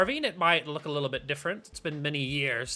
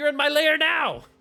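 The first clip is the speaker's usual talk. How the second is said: very high, loud, laughing through words; 12 semitones higher, 6 dB louder than usual. Voicing a character who laughs and looks around her lair: laughing while speaking. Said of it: "laughs a little bit and kinda looks around".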